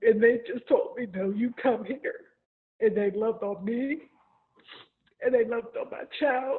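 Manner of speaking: crying through the words, tearful, breaking voice. Recalling when their child got injured, the speaker describes people who took them in: crying while speaking. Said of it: "I'm sorry, I'm crying".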